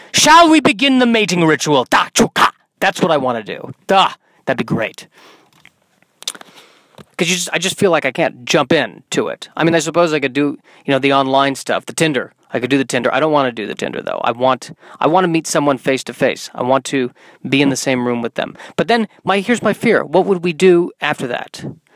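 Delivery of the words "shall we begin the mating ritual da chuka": high, loud, mock barked-out voice. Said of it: "like I was a Klingon on Star Trek".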